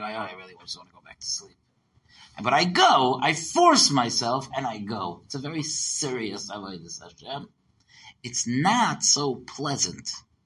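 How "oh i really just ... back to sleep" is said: muttering under breath, quieter, lower, faster. Recalling forcing themself up for morning prayers, retelling muttering under breath. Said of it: "under my breath".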